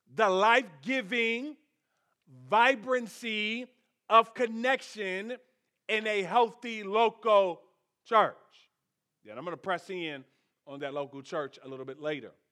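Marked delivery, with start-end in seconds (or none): 0.2-8.4 very slow, deliberate, drawn out word by word. Repeating a sentence to stress it, said really slowly. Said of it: "let me say it really slow".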